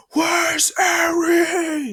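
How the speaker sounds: bursting, frantic, very high, very loud shout, one word stretched. Retelling a character bursting in looking for Eri: imitating a shout. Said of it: "And he shouts".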